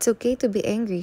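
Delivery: ordinary delivery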